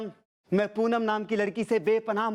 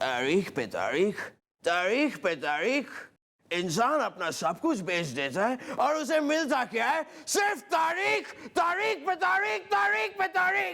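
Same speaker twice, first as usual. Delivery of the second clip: put-on loud film-hero voice, higher pitch; 4 semitones higher than usual. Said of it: "अब सनी देओल, सनी देओल।".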